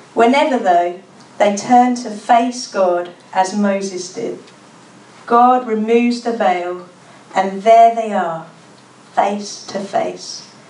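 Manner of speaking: slow, careful reading.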